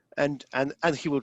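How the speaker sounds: usual speaking voice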